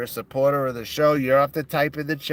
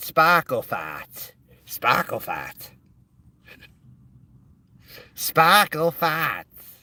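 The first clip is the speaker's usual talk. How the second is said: swooping, overdone, thick Boston accent, laid on; 2 semitones higher than usual. Repeating a joke phrase in an exaggerated Boston accent. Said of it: "With my accentuated Boston accent".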